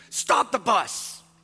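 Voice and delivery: mock sudden urgent shout, loud and high. Retelling how the rabbi shouted at the bus driver: retelling a shout. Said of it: "just shouts at the bus driver".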